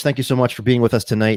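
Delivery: announcer-style host voice. Opening the show with a co-host, the speaker greets the audience in a host voice. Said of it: "I sound like I'm a fucking like".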